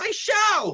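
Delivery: heated, angry delivery. In a dispute over the meadows, one insists on proving they're theirs, angry yell. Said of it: "why yell like that?".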